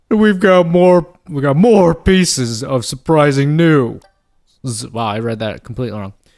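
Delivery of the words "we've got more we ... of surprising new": loud, high, belted put-on voice. Reading a game character's lines aloud in a put-on voice: Joe Swanson voice. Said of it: "I made him sound like, uh, like Joe Swanson".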